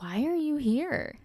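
utterly baffled, high tone. Reenacting a man's reply after hearing the speaker is from the U.S.: mock-dumbfounded reply. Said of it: "in the most, like, dumbfounded tone and manner".

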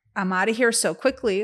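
normal talking voice

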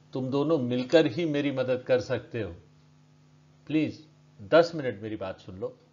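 plain reading voice

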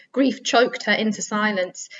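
ordinary talk

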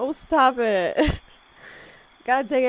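high, slow, teary, welling-up voice. Reacting to the deaths and getting teared up, the speaker talks in a teary voice. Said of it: "I'm like getting teared up".

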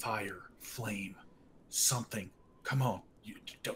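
hushed muttering under the breath. Voicing Silas as his magic words fail, muttering under his breath. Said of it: "is kind of muttering under his breath".

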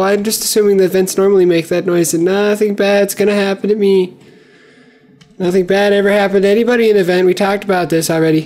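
frightened voice. Heading into a stuck vent while playing the game: scared voice. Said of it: "I don't know why my voice changed".

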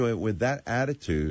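plain

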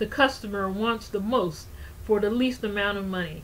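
ordinary delivery

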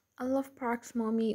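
plain

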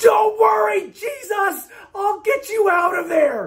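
put-on very high child's scream, all out, full-lunged. Retelling how a young daughter in church screamed at a box: retelling a child's scream. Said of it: "screamed at the top of her lungs".

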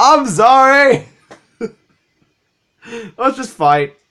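laughing hard. A gamer apologizes during a Pokemon battle, laughing too hard. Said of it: "I'm laughing too hard".

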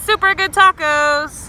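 very loud, high-pitched belted shout.

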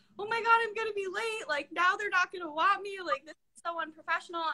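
high, tearful, crying voice, sobbing through words. Retelling a call to mom about being late: retelling crying. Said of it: "I called my mom crying, and I was like".

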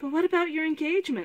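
aghast, horrified, high crying out. Narrator reads a lady-in-waiting speaking to Cimmerian, crying out horrified. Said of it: "The lady-in-waiting cried, horrified".

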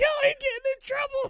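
shrill, very high, very loud laughing words. Retelling what girls in a car said: imitating girls laughing. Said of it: "they laughing like".

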